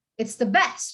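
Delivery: best stressed hard, weight landing on it. Teaching stress when the topic is already known: stress on best. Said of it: "you just emphasize on the descriptive phrase".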